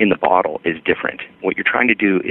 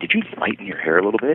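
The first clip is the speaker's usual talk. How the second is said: hushed, confidential stage whisper, half-whispered; 3 semitones higher, 4 dB quieter than usual. Retelling what a mother-in-law asked at brunch: imitating a half-whisper. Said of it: "she kind of whispers behind her hand".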